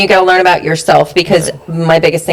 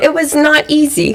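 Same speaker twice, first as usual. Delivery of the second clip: very high voice, close to tears; 11 semitones higher than usual. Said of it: "I'm tearing up".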